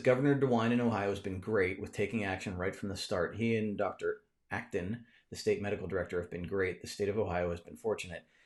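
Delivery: ordinary delivery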